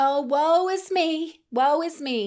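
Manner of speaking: dramatic put-on high, slow Southern belle drawl. Speaker voices their old thought of never being enough, southern belle accent. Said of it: "It's my Southern belle in me".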